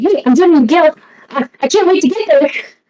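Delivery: high, obnoxiously funny and happy, super-ecstatic delivery. Playing a Pokemon signing up to join the guild, super ecstatic. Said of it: "Just like super ecstatic".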